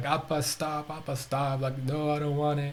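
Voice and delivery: mock tearful child voice, high, pleading through sobs. Retelling a daughter's pleas while being force fed: imitating a crying child.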